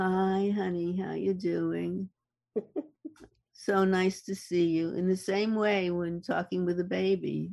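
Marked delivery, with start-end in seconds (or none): 0.0-4.9 sweet, friendly, welcoming tone. Demonstrating the prosody of a good relationship, greeting someone in a sweet tone. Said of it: "Being sweet".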